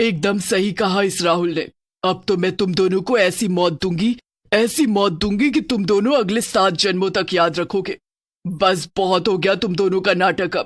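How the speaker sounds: fearsome, scary, menacing evil witch voice. In a narrated horror story, the witch addresses the two trapped victims: scary witch voice. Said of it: "अचानक से धुआं चला जाता है और उस हवेली के झूमर पर उन दोनों को एक डरावनी और भयंकर चुड़ैल बैठी हुई / [name] एक बहुत बुरी महिला थी जिसने गांव की सारी नदियों में विष घोल दिया था, क्योंकि उसे गांव के सभी लो".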